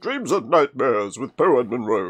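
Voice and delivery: big, daft, loud, booming put-on silly voice. Repeating a line from the game in a put-on voice: Brian Blessed voice. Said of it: "sounded a bit like Brian Blessed".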